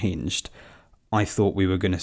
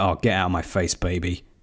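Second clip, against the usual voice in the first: normal talking voice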